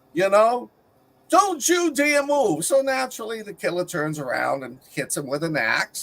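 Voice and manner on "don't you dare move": very high, shrieking screamed voice. Retelling a movie scene where a guy jumps out: imitating someone screaming. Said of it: "screams at him".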